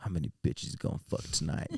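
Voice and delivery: whispered, breathy voice. Retelling what a friend said before going to a club: imitating a friend. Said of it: "he'd be like".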